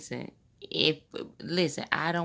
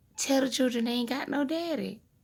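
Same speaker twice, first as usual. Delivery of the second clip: put-on higher-pitched granny voice; 6 semitones higher than usual. Retelling what her granny said today: imitating her granny's voice. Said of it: "my best reenactment of her voice".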